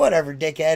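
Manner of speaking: plain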